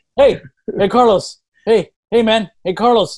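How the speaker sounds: put-on Spanish accent. Retelling how Bill greets Carlos, imitating Bill's Spanish accent. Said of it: "Bill has a, a, uh, a Spanish accent".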